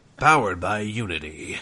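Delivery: mock movie trailer announcer voice. Retelling the game intro's narration: imitating movie trailer announcer voice. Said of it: "it's the same guy who was like".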